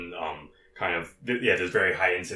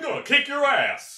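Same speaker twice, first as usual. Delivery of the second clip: high, loud cartoon dad voice. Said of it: "There we go".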